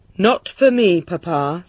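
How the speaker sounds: calm, composed, even voice. Narrator reads the princess replying to the shouting king; calm. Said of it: "said the princess calmly".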